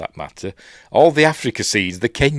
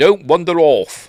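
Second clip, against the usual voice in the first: short, clipped British delivery, raised; 8 semitones higher, 6 dB louder than usual. Describing a film scene, voicing a man telling a fella, in a clipped british accent. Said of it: "in a clipped British accent".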